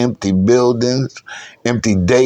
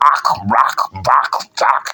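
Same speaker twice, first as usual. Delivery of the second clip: drawn-out "ak" syllables, spat out slowly and harshly. Showing how the accent sounds, like spitting out something bitter: harsh spitting "ak" accent sounds. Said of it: "part of the accent".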